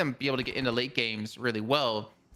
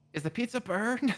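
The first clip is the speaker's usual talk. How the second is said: play-acted, shrill, very high-pitched scream; 10 semitones higher than usual. Retelling calling out to a fiance about the pizza: retelling own scream. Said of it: "So I'm screaming".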